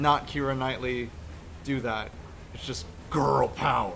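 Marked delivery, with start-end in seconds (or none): 2.5-4.0 rough, raspy, creaky comic voice. Discussing the latest movies, delivering a line in a Filthy Frank kind of voice. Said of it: "sounds more like a Filthy Frank kind of voice".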